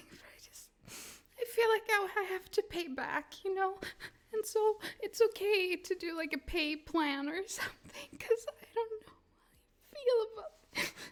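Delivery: tearful, speaking through tears, crying. Thanking the audience for letting them be here, the speaker is crying. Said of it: "I'm crying like a fucking fourteen year old over this".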